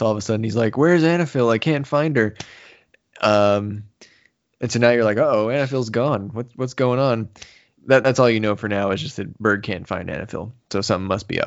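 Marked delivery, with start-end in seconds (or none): 0.8-2.3 mock anxious, fretting, pitched-up nervous tone. Recapping a story's plot, the speaker acts out a character's line, acting out nervous worry. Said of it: "Berg's all he's all nervous".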